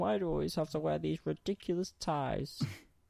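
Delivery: creaky, high, rough video game character voice. Talking about disliking neckties, the speaker does a Half-Life 1 guy impression. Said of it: "I trust that was a good impression".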